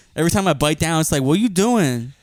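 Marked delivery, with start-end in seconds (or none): 1.3-2.1 sassy woman voice, full of attitude. Riffing about a tooth with an Amazon job, voicing the tooth: sassy woman voice. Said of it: "This is sassy woman".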